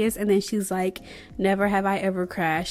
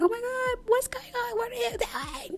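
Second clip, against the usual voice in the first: panicked fretting, very high and hushed; 6 dB quieter than usual. Retelling a party game, acting out Blair reacting to Adam, imitating Blair freaking out. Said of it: "Blair is freaking out".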